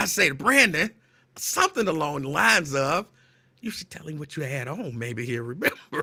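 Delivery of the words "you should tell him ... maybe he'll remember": soft, sideways half-whispered aside. Retelling a teasing remark to a friend: retelling a half-whisper. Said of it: "So I whisper that to Brandon".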